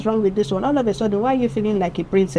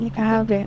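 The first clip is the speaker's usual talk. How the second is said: half-hearted, reluctant, unenthusiastic giving-in tone. Retelling being asked for a pen: acting out an unenthusiastic reply. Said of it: "that means I'm not enthusiastic".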